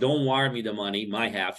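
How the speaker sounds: normal talking voice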